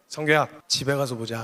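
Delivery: very low, sweetly gentle, mock-kind half-whisper. Speaker retells his mother half-whispering in his ear, imitating mother's gentle half-whisper. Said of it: "귓속말로 귀에다 대고 이렇게 인자하고 온유하게".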